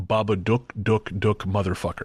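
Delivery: put-on very menacing voice. Retelling the voice a man heard in his left ear, imitating a very menacing voice. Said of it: "in a very menacing".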